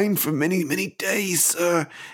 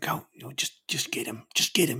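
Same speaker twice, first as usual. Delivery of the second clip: muttered under breath, much quieter, slower; 4 semitones lower, 6 dB quieter than usual. In a roleplay scene, Vinay speaks aside, muttered under breath. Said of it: "under his breath".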